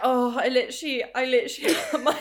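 laughing while talking. Trying to speak after a joke that really tickled her: laughing while talking. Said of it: "That really tickled me".

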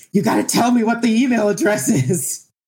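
put-on very high, frantic, panicked pleading. Retelling shaking her on her deathbed: imitating own panicked plea.

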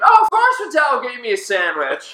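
high-pitched, wide-swinging mocking voice.

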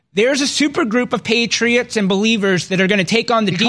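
plain

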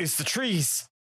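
big dramatic delivery. Retelling a favorite movie line, burst in all dramatic: imitating Mark Wahlberg, dramatic. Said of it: "bursts in the room all dramatic and he goes".

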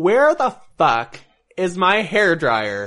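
put-on swooping, high Valley Girl delivery. Quoting someone to friends in conversation, almost a Valley Girl voice. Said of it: "You sound like a Valley Girl almost".

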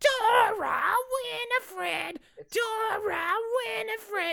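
witch character voice, pitched very high. Describing a wizard character, the speaker quotes his shout with a bit of witch voice. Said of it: "he's also got a bit of the witch voice".

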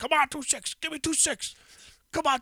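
shrill, very loud, high-pitched scream. Retelling a man sitting at a gambling table, re-enacting his screaming. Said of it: "he's just screaming".

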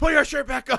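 fed-up, disbelieving yell. Retelling how they yelled at the TV: imitating someone yelling. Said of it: "yelling at my T V".

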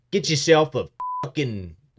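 put-on Australian accent. Remembering old restaurant commercials, a speaker does the Outback commercial voice. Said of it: "The American guy with the Australian accent".

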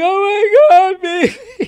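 drawn-out, very high, slow hysterical sobbing wail. Retelling a phone call with his wife: imitating someone crying hysterically. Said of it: "she was crying hysterically".

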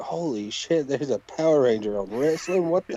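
usual speaking voice

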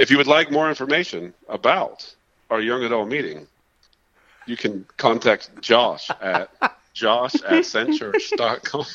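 polished, animated, professional promo-style announcer voice. Giving contact details for the young adults meeting: mock professional announcement. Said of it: "you sounded so professional in that".

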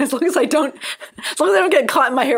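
fast, high laughing under the breath.

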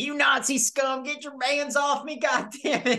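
yelling, very high-pitched, acted out. Describing a favorite movie scene, retelling Brad Pitt yelling. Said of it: "He's just yelling".

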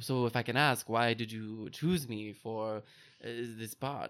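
very bad, truly terrible French accent. Quoting Timmy's first line, Timmy in terrible French accent. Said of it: "It's my very terrible French".

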